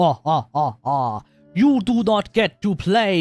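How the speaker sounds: loud, slow, drawn-out fake alien-boss accent. The speaker acts out Hoyo's answer to a player, fake Jabba the Hutt accent. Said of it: "the fake Jabba the Hutt accent".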